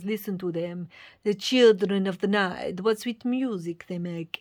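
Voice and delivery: deliberately poor vampire voice. Quoting a famous line from a book aloud: bad Dracula accent. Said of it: "Excuse my bad accent".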